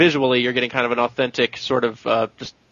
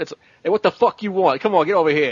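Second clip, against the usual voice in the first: fast, pitched-up, tough-guy gangster voice; 6 semitones higher than usual. Describing a game's English dub of Japanese characters: imitating a gangster-style dub voice. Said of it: "trying to maintain the kind of the gangster sort of speaks".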